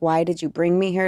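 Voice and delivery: put-on angry, demanding outburst. Retelling complaining to her boyfriend on night one at Burning Man, mock-angry outburst. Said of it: "And I was like angry".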